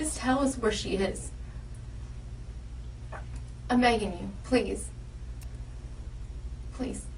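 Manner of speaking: very slow, drawn-out, desperate pleading. Pleading with a questioned person to tell where she is: desperate begging. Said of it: "Why is she begging him?".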